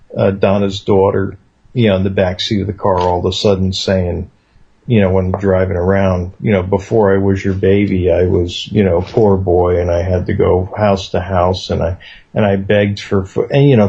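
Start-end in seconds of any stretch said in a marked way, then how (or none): none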